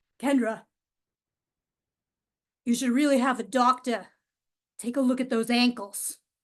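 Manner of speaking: put-on patchy, inconsistent Boston accent that comes and goes. Retelling what her dad said behind her on the way to her car, inconsistent Boston accent. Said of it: "in his strangely inconsistent Boston accent".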